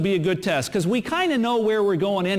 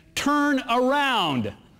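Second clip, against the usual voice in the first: insistent, emphatic British sat-nav voice, pitched up; 5 semitones higher than usual. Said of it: "she was very emphatic".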